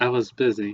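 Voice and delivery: put-on mournful, sad, downcast voice. Retelling a school story, speaker acts out a girl answering her teacher, mock-sad voice. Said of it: "in a sad voice".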